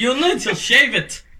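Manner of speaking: fake, put-on Jamaican accent. Playing a Jamaican policeman in an improv game: put-on Jamaican accent. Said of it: "It's Jamaica".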